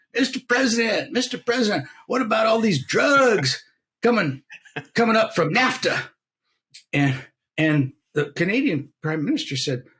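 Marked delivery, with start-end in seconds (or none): 0.1-6.0 mock, high, full-lunged bellow. Act out a woman in a wheelchair in the Rose Garden bellowing at the President. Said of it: "she bellowed out at the top of her lungs".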